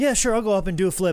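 put-on high, loud, careless, cocky kid voice. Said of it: "young kids that are just like".

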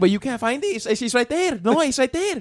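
put-on Spanish accent, pitched very high. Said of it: "And I can do this accent".

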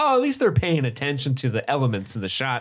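usual speaking voice

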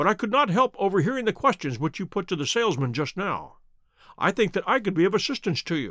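ordinary delivery, nothing marked

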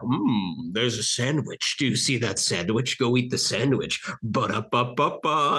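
slow, plain, unsettlingly ordinary voice-over. Describing a fast food commercial, imitating its narrator: Brian Cox voice. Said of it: "it's just Brian Cox's voice".

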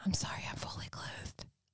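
very quiet, hushed, breathy whisper. In a role-play, hugging another character and speaking into his ear: whispering in his ear. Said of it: "I whisper in his ear".

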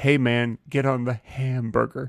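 slow, deliberate delivery.

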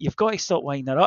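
ordinary delivery

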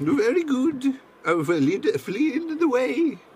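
pitched way up with swooping intonation. Role-playing a guide taking Mr. Joinus up to Scarlet's office, in a Tootsie Pop owl voice. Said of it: "I realize I'm doing the Tootsie Pop owl, is what that voice is".

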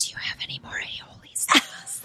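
hushed whisper under the breath. Retelling asking a cashier for more sauce: imitating own whisper. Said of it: "why are you whispering?".

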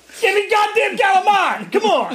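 put-on very high, yelling child's voice. Describing kids yelling food orders in the car, the speaker imitates kids yelling. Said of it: "your kids are yelling".

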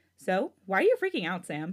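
ordinary talk, nothing marked

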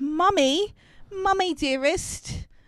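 put-on high-pitched British accent. Recapping a show, the speaker quotes the child Caitlin calling her mother, Caitlin's British accent. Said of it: "I don't know why she's British".

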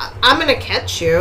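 ordinary talk, nothing marked

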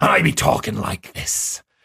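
cartoonish pirate-style accent. The speaker shows how he talked in character as a pirate, Mad Captain Tom pirate accent. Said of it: "would not be a realistic pirate accent".

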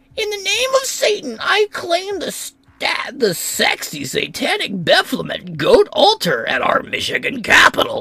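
fun, silly, playful put-on voice, very high. Reading a quoted statement from an article aloud, in a fun put-on voice. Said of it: "that was a fun voice".

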